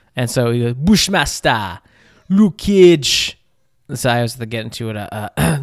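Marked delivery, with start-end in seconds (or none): 0.8-3.4 put-on Jamaican accent, higher, louder, slower. Showing listeners how he does a Jamaican accent, Bushmaster Jamaican accent. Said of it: "whenever I do Jamaican accent".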